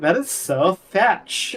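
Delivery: very slow, camped-up, flamboyant voice.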